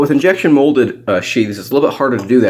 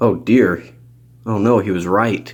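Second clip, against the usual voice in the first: ordinary talk, nothing marked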